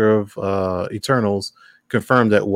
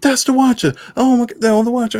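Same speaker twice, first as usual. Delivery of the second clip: high, yelled-out outburst. Retelling how a guy in the theater yelled: imitating a guy yelling out. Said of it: "how many times are you gonna be yelling out stuff".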